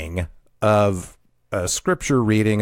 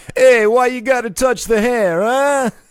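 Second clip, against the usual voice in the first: terrible fake caricature New Jersey accent, very high; 14 semitones higher, 6 dB louder than usual. Speaker imitating a man from their historic caravan group, terrible fake new jersey accent. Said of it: "sounded like he was trying to be John Travolta in Saturday Night Fever".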